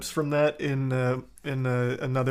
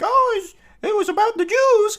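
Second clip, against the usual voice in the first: put-on puppet voice, higher and louder; 8 dB louder than usual. Retelling how someone made a tiny net talk: Elmo voice. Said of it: "he gave it an Elmo voice".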